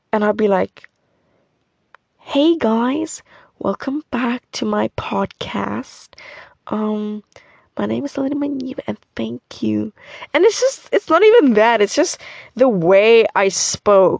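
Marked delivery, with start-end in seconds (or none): 2.2-9.9 soft, strained, forced put-on American accent. Recalling her old podcast intro, trying hard for an American accent. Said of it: "trying so hard to have an American accent".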